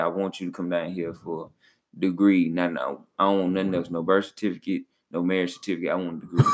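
ordinary talk, nothing marked

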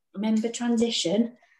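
soothing, reassuring stage half-whisper. Retelling a friend saying it in their ear, imitating a very quiet voice. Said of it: "very quietly".

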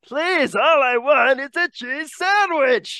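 very high, perky, upbeat character voice. Discussing why people dislike Pee-wee Herman, the speaker slips into a voice: Pee-wee Herman voice. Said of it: "You're doing the voice".

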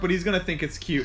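ordinary talk, nothing marked

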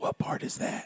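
soft, unvoiced whisper. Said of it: "He just leaned over and said".

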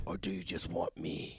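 very low, quiet, soft hushed rasp. Reading a script aloud with others, voicing Batman in a raspy Batman voice. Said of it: "you don't have to do the rasp".

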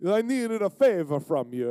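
put-on Italian accent. Retelling a man asking the speaker for a favor; Mario-like Italian accent. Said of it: "He sounded like Mario".

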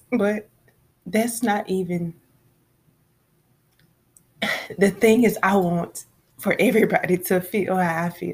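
weeping happily, crying with joy. Talking to an audience about an overwhelming experience, crying with joy. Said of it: "I'm not crying because I'm sad. I'm crying because I'm overwhelmed with joy".

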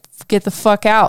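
furious, boiling-over angry outburst. Imagining a daughter in this situation and reacting: acting out own imagined anger. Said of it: "my blood would boil".

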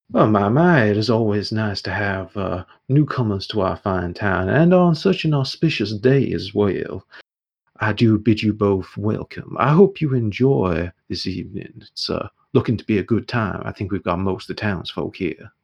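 warm, friendly, welcoming tone. A townsman greets two newcomers to the town's evening event, warm welcoming greeting. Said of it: "greets you both warmly and goes".

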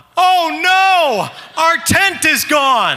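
mock very high, very slow, drawn-out alarmed yell. Recalling finding the backyard tent gone, retelling their own yell. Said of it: "I yelled out".

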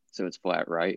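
confiding hushed stage whisper, close and intimate. Retelling a question asked in a crowded bar: imitating a half-whisper. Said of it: "I whispered in his ear".

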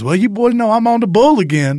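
high, shrill, top-of-the-lungs loud yell. Retelling a Waffle House visit, imitating Peggy Sue yelling. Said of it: "Yelling, talking like that".

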